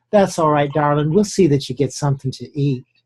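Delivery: put-on small voice with Southern accent. Retelling how a woman calmed a man by touching his shoulder, little Southern Peachtree voice. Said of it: "with this little southern Peachtree voice".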